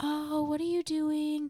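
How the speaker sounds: soft reassuring high tone. Explaining how men talk to their girlfriends, the speaker demonstrates a soothing higher-pitched girlfriend voice. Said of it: "a higher pitched tone that is soothing".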